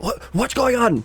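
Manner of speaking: group shouting. Voicing prisoners inside crates calling out in a storm: prisoners shouting. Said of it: "just mostly shouting themselves like".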